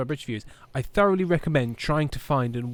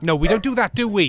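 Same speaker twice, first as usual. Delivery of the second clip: put-on high, raised, scolding Welsh mother accent; 7 semitones higher, 8 dB louder than usual. Showing how Aaron talks when dealing with Monty, imitating Aaron's Welsh mum voice. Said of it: "he gets like Welsh mum voice".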